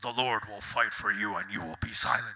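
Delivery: very low, deep narrator voice-over. Imitating the voiceover of Bible-quote reels on social media: imitating a very deep voice. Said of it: "in a very deep voice".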